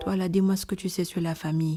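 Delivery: flat, one-note monotone with zero energy. Imitating how an actress says her film lines, flat one-note delivery. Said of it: "Elle n'a aucune énergie. ... Elle a juste une note du début à la fin du film. Elle parle comme ça".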